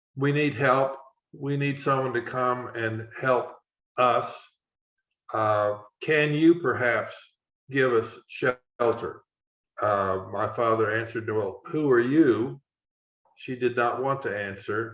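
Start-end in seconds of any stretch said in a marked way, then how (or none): none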